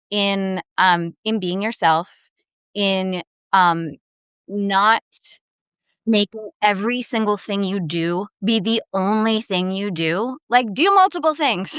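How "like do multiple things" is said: half-shouted, high, raised yell. Making an emphatic point in conversation: yelling. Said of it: "Now I'm just yelling".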